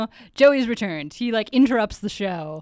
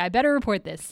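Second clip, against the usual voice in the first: normal talking voice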